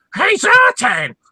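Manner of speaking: shrieking, very high, loud scream. Retelling recording a scratch track at 1 a.m., retelling a Dreadnok-impression scream. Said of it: "screaming into my microphone".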